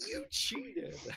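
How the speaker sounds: put-on very high, aggressive, blaming young teenage voice. Voicing the character again, pointing at the cup: aggressive young teenaged voice. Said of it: "very aggressively".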